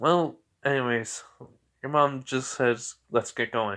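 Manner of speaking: plain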